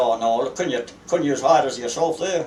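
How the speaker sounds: ordinary delivery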